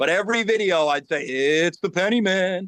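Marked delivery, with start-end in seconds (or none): 1.2-2.7 slow, eerie, creepy put-on voice. Recalling the line said in every coin video: creepy voice. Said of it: "with this creepy voice".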